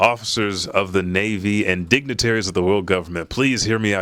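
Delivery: plain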